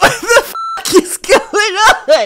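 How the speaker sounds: high, slow, laughing disbelief.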